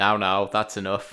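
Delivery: mock flat, toneless delivery. Mocking a film sheriff actor's line reading, imitating a monotone delivery. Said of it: "He had the most monotonous, no tone to his voice".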